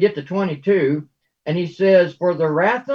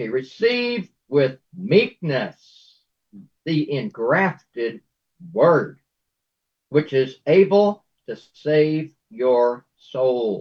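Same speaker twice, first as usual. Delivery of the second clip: very slow, low and deliberate, each word weighed; 5 semitones lower than usual. The speaker reads a scripture verse aloud to listeners: very slow, deliberate. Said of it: "I said that very slowly, deliberately".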